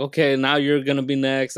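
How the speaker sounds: ordinary talk, nothing marked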